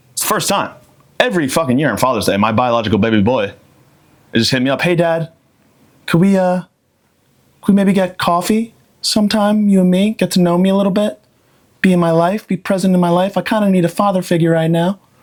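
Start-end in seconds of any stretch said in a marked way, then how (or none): 4.8-14.9 halting, hesitant, needy, pitched-up voice. The speaker imitates his son calling him on Father's Day:. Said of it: "That's how my son sounds".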